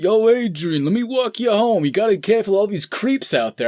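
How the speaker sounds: high-pitched, creepy, coaxing sweet voice. Acting out a scene where he offers to walk her home: Rocky impression. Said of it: "he's literally like".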